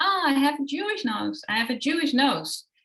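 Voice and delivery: put-on acted, high, wailing small child's cry. Retelling what a three-year-old girl said in a video: imitating a screaming child. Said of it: "screaming, like".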